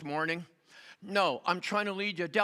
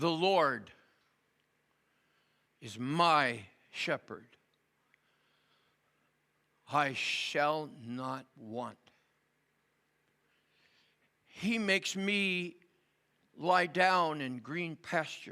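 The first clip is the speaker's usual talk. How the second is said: slow-motion reading aloud. Reading a psalm aloud to listeners who have their eyes closed, very slow reading. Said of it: "I'd like to read it in very slow motion".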